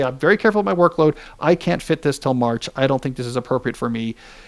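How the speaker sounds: ordinary talk, nothing marked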